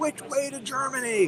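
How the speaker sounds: loud, high-pitched, joking yell.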